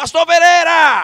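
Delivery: very high, loud, slow shout.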